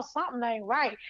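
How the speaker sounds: ordinary delivery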